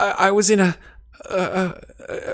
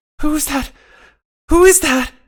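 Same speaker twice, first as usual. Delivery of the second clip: put-on frantic, terrified, high little child's cry; 7 semitones higher, 6 dB louder than usual. Voicing a faint reply through telepathy: scared young child's voice, frantic. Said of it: "the answer is sort of frantic".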